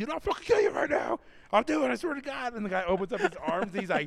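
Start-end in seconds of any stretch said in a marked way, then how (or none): 0.0-2.5 mock shrill, very high-pitched, threatening yelling. Retelling a confrontation, the speaker re-enacts yelling at a guy: retelling own yelling. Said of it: "I'm like yelling at this guy".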